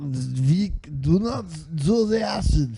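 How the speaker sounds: loud, high, barked bad fake German accent.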